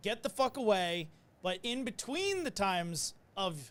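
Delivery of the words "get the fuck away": put-on yelling. Retelling what the patient yelled at the EMT: imitating a patient yelling. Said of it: "they're yelling".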